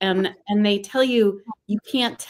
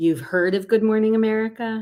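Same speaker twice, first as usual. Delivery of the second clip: put-on wry, dry delivery. Retelling a phone call with good news, imitating the caller's wry tone. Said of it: "because she's so wry".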